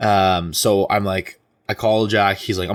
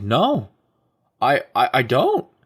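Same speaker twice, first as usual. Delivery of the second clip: put-on very slow, drawn-out drunken stammer, voice cracking; 4 semitones higher than usual. Retelling a drunk night, answering friends who ask where everyone is: retelling a cracking voice. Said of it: "Like my voice is cracking".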